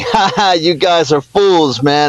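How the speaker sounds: put-on chuckling through the words, laughing, devilish. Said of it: "Satan's laughing at the human race, going".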